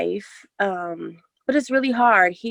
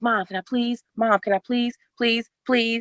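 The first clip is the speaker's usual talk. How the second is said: put-on tearful, sobbing, begging tone; 3 semitones higher, 3 dB quieter than usual. Retelling a son begging on the kitchen floor: imitating a crying plea. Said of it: "And so he's crying".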